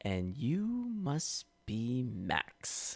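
very slow, dismissive, disdainful drawl. Quoting an actor's line reading of a film line: imitating Jason Patric's disdainful delivery. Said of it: "Such disdain and "I don't give a fuck about you" tone".

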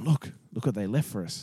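mock-excited bloke voice. Retelling how a bloke up ahead called him over: imitating an excited bloke. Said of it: "he's all excited and he's going".

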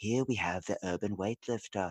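hushed wildlife documentary narrator voice. Gym worker showing how he narrates his gym like a nature documentary: nature documentary narrator voice. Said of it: "like a nature documentary for my gym".

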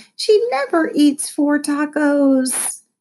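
high, complaining, put-upon whine. The narrator points at Lexi's taco shells and complains to Mom: whining. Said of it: "I whined".

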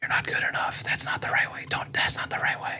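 eerie, creepy, breathy whisper. Describing a game's voices that whisper in the player's head: imitating whispering voices. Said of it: "these voices just whispering".

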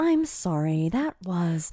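put-on chipper, condescending voice. Imitating how a quiz host tells contestants they are wrong: chipper condescending Katie Couric voice. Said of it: "so chipper to the point of sounding condescending".

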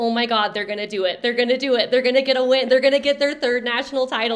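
mock fast, excited, losing-it sports fan cheering. Speaker reenacts watching the game and screaming at the TV, reenacting screaming at the TV. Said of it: "I was screaming at the TV".

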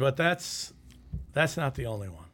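ordinary talk

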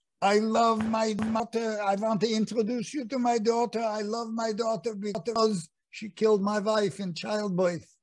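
put-on Yiddish accent, put on. Recalling an improvised stage line introducing a daughter to the audience: Pantalone with Yiddish accent. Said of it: "Pantalone had a Yiddish accent".

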